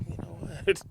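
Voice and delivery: whispered, with a rising end. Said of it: "I'm like".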